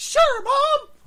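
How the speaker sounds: high squeaky cartoonish voice. Retelling his childhood reply to Mom's movie invite, Mickey Mouse voice. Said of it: "I sound like Mickey Mouse when I was a kid".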